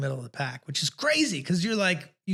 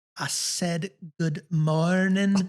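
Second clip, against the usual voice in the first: very slow, each word dragged out. Retelling how a man repeated a greeting to someone who didn't understand, very slowly. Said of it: "He says, really slowly".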